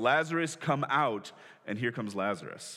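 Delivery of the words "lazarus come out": mock calling out in a loud, raised voice. Retelling the story of a man dead four days called back to life, retelling a loud call. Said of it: "he just says in a loud voice".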